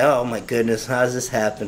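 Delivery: ordinary delivery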